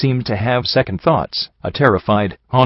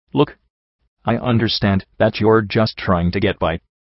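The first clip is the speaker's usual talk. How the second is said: ordinary delivery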